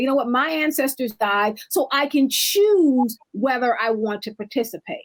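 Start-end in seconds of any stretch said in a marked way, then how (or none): none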